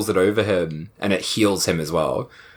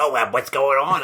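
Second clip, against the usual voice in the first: high, irritating, annoying, stupid-sounding silly voice; 5 semitones higher than usual. Imitating a talking tongue creature from a show: irritating stupid voice. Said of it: "its voice is so fucking irritating".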